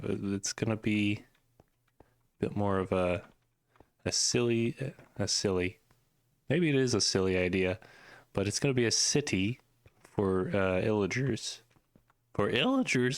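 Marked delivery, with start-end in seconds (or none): 12.3-13.2 voice breaking, cracking and pitched up. Explaining an idea for a city, voice cracking. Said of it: "he said as his voice cracked".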